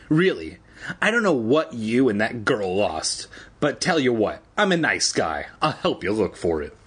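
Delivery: normal talking voice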